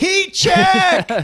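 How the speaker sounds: mock very high, loud, excited shriek. Retelling what he yelled out at a kid's basketball game, retelling a scream. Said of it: "I just screamed out".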